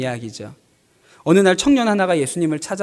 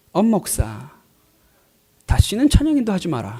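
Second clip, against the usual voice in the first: put-on distinctive Busan accent. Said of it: "그 특유의 부산 억양으로".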